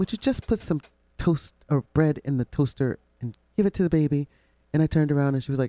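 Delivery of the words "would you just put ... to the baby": put-on old grandmother voice. Retelling what she said behind the speaker at the dining area: imitating her voice. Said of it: "in her voice".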